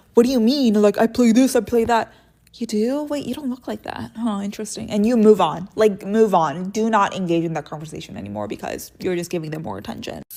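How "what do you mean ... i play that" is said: flustered, thrown, scrambling, protesting tone. Retelling how fit men answer her, imitating a flustered man. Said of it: "they get so flustered".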